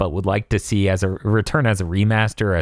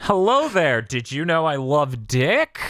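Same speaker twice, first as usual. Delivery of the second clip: put-on flamboyant character voice, higher; 6 semitones higher than usual. Imitating an offensive flamboyant game character: put-on flamboyant character voice. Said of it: "That's my character".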